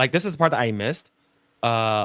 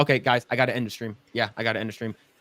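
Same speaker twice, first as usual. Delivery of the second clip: ordinary delivery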